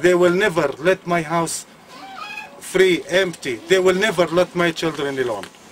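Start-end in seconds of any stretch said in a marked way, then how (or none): none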